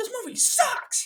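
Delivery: play-acted fed-up man's yelling, called out flatly and loudly. Retelling a bad movie screening, the speaker acts out a man walking out, imitating a man screaming. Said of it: "He screamed it".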